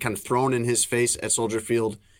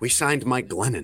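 put-on muttering under the breath. Retelling an exhale at a press conference: imitating a remark under his breath. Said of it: "under his breath".

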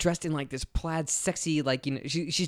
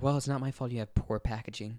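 mock seductive voice, lower and quieter; 4 semitones lower, 6 dB quieter than usual. Retelling a character's line from a scene: put-on sexy voice. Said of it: "sexy talk".

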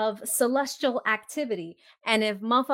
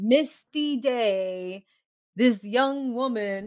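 TV show narrator voice. Retelling a scene, speaker narrates it in Unsolved Mysteries narrator voice. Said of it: "I could hear the guy's voice coming over the whole scene".

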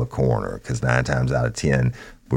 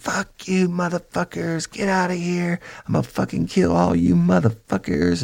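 put-on woman's screaming, much higher pitch. Retelling a scene with a negotiator, imitating a woman screaming. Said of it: "But she's screaming".

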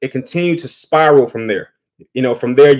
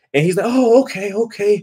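ordinary talk

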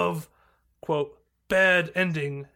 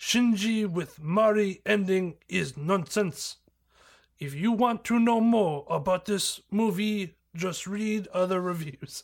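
poor put-on Japanese accent. Reading aloud a fan's online movie review: bad japanese accent. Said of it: "I can just do bad Japanese".

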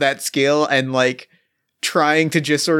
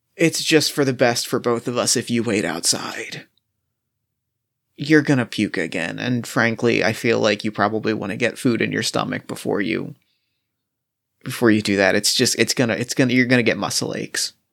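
whispered, lower pitch; 5 semitones lower than usual. Playing a character who tells another to wait outside: whispering in character. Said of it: "I kind of whisper in your ear".

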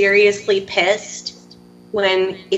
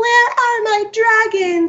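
put-on, drawn-out, very high-pitched childlike tantrum scream; 14 semitones higher than usual. Retelling a character screaming over missing dragons: imitating a scream. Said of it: "when she's screaming".

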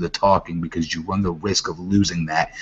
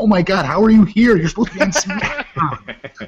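put-on screaming, higher and louder; 13 semitones higher, 5 dB louder than usual. Acting out an excited wrestling fan at ringside: imitating a screaming fan. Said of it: "would you be screaming there".

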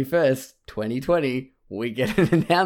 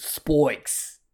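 bad, over-the-top fake Australian accent; 2 semitones higher than usual. Explaining how a word is said, say spikes in a bad australian accent. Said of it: "someone doing an impersonation of an Australian accent".

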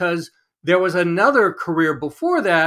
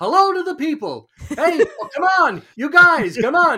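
bad put-on enthusiastic TV host voice, higher; 10 semitones higher than usual. Saying hello to the people at home: very bad Phil Rosenthal imitation. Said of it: "a very bad imitation of one of my favorite people, Phil Rosenthal".

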